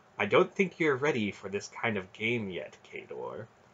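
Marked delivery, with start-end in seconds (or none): none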